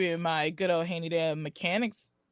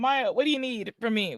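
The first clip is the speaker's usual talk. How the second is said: calling out across in a put-on voice; 4 semitones higher than usual. Calling out to maya during the mission: yelling out in character. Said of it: "Hunter yelled out".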